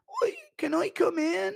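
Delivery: very high, slow, creaky voice with a rasp. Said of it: "Impression of [name]... That's the [name] one".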